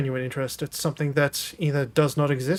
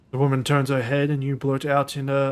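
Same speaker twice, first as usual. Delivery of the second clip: ordinary delivery, nothing marked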